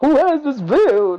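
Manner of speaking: put-on vampire voice, pitched high. In group chatter, a speaker asks who has this build: Dracula voice. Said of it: "why'd you sound like Dracula?".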